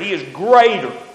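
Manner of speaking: normal talking voice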